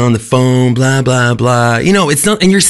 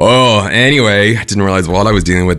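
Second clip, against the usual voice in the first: ordinary delivery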